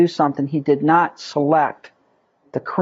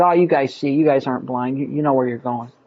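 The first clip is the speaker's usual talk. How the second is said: mock sarcastic tone, lower pitch; 4 semitones lower than usual. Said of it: "sarcastically said".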